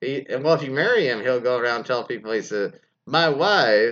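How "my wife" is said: put-on Eastern European accent, louder. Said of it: "in his best Borat impression".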